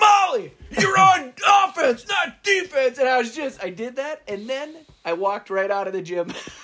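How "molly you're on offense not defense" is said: mock very high, loud, full-throated shout. Retelling yelling at a player in a loud gym, reenacting their own yell. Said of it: "But when I yelled, I was like".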